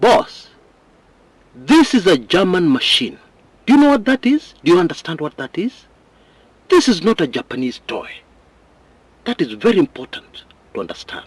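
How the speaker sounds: furious rant. A journalist quoting an expert who thought he wasn't getting it, retelling it very angrily. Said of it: "in a very angry tone".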